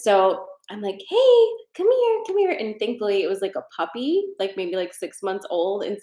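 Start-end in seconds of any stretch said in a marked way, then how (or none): 1.1-2.5 put-on very high-pitched, cooing baby talk. Speaker retells calling a puppy over to them, in puppy voice. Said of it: "as soon as I did puppy voice".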